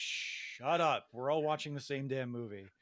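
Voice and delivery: ordinary talk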